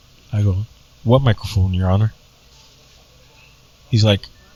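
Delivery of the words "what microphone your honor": loud, unamplified voice. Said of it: "how loud I was".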